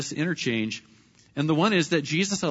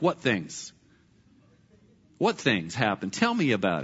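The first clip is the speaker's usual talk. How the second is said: playful, teasing sarcasm, feigned curiosity, swooping pitch; 7 semitones lower than usual. Acting out a playful question to the disciples: playful sarcastic voice. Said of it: "a little sarcasm from Jesus".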